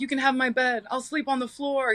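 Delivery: play-acted, desperate begging and pleading voice. Retelling how he begged on his knees for her to stay: imitating someone begging. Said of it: "on his knees begging me".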